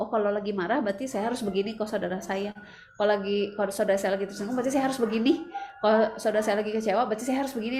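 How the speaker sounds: ordinary delivery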